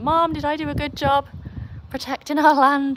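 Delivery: high-pitched dog voice. Voicing the dog after it scared a neighbour: voicing Ruby the dog. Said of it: "She's like".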